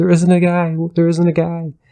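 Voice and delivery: mock tearful, very high sobbing. Retelling a wife's reply to her husband at a Denny's, retelling a sobbing wife. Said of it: "The wife starts sobbing and".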